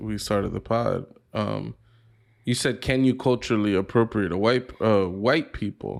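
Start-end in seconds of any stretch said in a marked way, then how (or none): none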